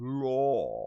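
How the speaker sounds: drawn-out, fancy British accent like an English butler. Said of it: "Notice how I kinda just let it go".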